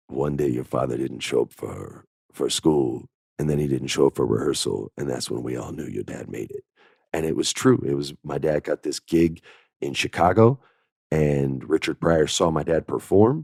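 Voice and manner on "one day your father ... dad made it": deep, low, soft voice. Retelling a story told to him about his father, Keith David low voice. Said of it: "he has that great low voice".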